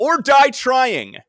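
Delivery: high, slow, loud yell. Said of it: "then he yells out loud".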